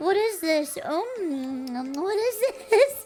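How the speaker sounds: acted crying while chewing. Retelling tasting food her uncle handed her, acting out crying while eating. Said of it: "I'm still crying. I'm like, mm".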